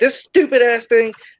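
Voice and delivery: mock pissed-off, fed-up angry shout. Retelling a moment when the listener got a new phone: imitating someone yelling angrily. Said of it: "and you're yelling".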